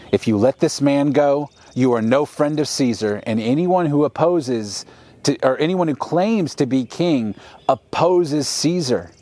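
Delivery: ordinary delivery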